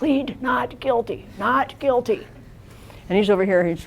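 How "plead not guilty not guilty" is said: slow, hushed, quiet whisper. Retelling coaching a defendant from off camera: whispering. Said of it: "I'm whispering to him".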